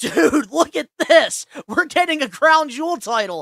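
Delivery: loud, high, slow, drawn-out hollering yell. Retelling how a friend showed the news on his phone: imitating John yelling. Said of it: "I could hear that man's voice yelling that to you".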